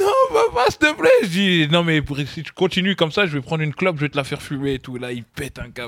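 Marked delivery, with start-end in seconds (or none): 0.0-1.1 put-on very high, loud, acted-out sobbing child voice. Father retells his child's reaction to his cigarette threat: imitating a child crying. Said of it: "il commence à pleurer".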